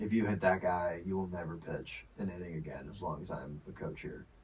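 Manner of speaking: dead-calm, unruffled, soft and quiet tone. Recalling a coach warning him not to hit a batter, imitating Smitty's super calm warning. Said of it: "Smitty comes up to me super calmly".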